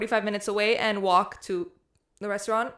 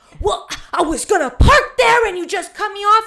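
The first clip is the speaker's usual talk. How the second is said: very high-pitched, shrill, loud yelling; 11 semitones higher, 10 dB louder than usual. Retelling a parking fight where the other driver yells: imitating a woman yelling. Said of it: "We're yelling at each other".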